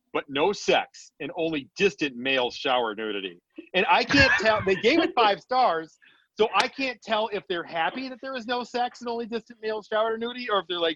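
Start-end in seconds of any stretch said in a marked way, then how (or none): none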